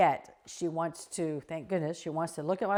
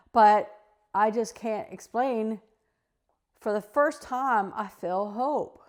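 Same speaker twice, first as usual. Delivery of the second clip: raised voice, fighting off tears; 4 semitones higher, 6 dB louder than usual. Speaking about working on mental health, holding back tears. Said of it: "I'm trying not to cry".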